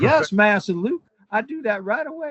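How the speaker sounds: put-on American Southern accent.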